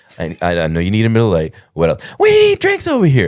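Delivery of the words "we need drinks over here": mock woman's yell, much higher pitch. Retelling how a lady kept yelling while another ordered, imitating her yelling. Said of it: "this lady's yelling".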